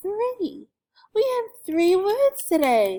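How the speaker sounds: high, loud, excited announcing tone.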